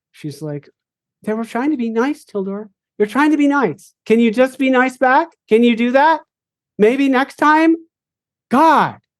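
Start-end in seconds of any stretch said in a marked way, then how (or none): 1.2-8.9 shrill, scolding yelling. Voicing a character yelling at Tildor to be nice back: yelling at someone. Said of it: "you can hear her yelling at Tildor".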